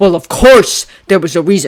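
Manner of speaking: scornful, contemptuous, very loud voice. Reading a story aloud, Harry interrupting Albus: contemptuous. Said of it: "Harry said contemptuously".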